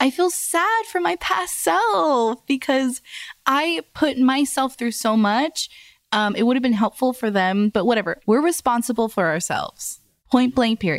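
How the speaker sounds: crying while talking, fighting tears, "self" drawn out. Talking about feeling sad for a past self, crying while talking. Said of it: "Did you just stop crying?".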